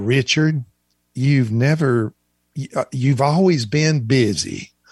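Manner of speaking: put-on Southern accent. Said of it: "who had a Southern accent".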